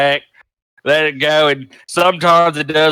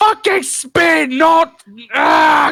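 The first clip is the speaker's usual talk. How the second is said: frustrated yell, much higher pitch; 13 semitones higher than usual. A goblin keeps failing to teach his metal bird, frustrated yelling at bird. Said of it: "continuing to yell at his bird".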